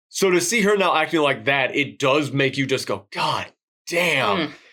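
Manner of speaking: ordinary delivery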